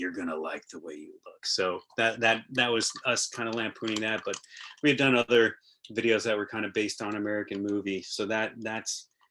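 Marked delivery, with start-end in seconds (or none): 0.0-1.4 very deep, very low, creepy pitchman voice. Retelling how the guy in old TV commercials ended them: creepy Men's Wearhouse ad voice. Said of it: "would say very creepily".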